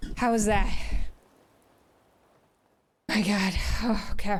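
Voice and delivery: winded, breathing hard. Leading a workout class right after the jumping, out of breath. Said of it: "I'm out of breath".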